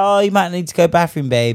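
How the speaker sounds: put-on polite, gentle tone. Acting out telling a partner to use the bathroom: acting out saying it nicely. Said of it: "a real nice thing".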